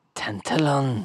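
tantallon said in a rough, gruff voice. Repeating a castle name while working on a character, speaker uses a gruff voice on tantallon. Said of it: "You just said it in a gruff voice".

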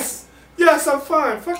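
very high, words squeezed out through giggles. Answering another speaker who asks if they are okay, laughing while talking. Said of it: "He's got the giggles now".

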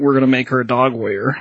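plain

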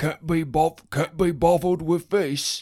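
put-on English accent. Showing off an English accent mid-conversation, English accent. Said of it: "That's my English accent".

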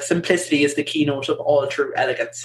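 ordinary talk

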